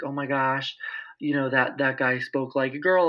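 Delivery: ordinary talk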